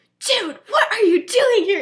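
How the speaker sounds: very high, very loud scream-whisper. Retelling how a girl calls out of her window at night: imitating a scream whisper. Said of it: "scream whispers out".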